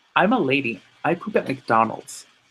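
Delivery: put-on thick, laid-on Russian accent. Quoting Sophie from Two Broke Girls, in a thick Russian accent. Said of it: "In like a thick Russian accent".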